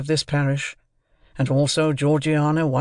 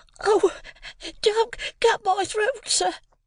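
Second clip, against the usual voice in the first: very high, terrified, frightened pleading tone. Seized by the chin by a man, the boy pleads in terror. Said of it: "I pleaded in terror".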